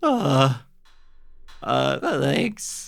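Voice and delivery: high, hesitant, nervous, stammering. Retelling their own reply at fourteen: imitating own nervous younger self. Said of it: "a nervous little fourteen-year-old".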